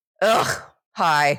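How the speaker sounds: weary, worn-out tone. Showing how a true greeting would sound while recording in the morning: tired greeting. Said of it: "I'm so tired right now".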